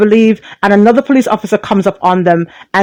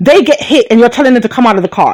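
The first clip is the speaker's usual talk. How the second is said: plain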